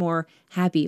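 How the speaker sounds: ordinary talk, nothing marked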